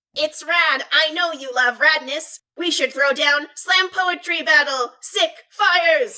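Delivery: mechanical, computerised, synthetic robot voice. Reading a story aloud, voicing a robot challenging a friend: robotic voice. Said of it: "The robotic voice declares".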